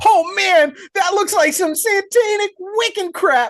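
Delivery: very high, shrill, petrified, terrified cry. Retelling a man's reaction after a jump scare: imitating a petrified man. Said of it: "And just absolutely petrified".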